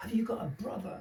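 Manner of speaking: put-on shouting market woman voice. Retelling what a woman at a market shouted: imitating a woman shouting. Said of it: "she shouted at me going".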